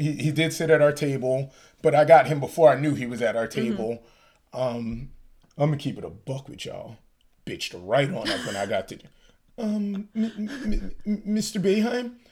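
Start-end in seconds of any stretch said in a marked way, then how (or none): 9.6-12.1 meek, feeble, timid little voice, pitched up. Retelling how they addressed a man at the table, imitating a meek, feeble voice. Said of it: "I said it in such a meek, feeble voice".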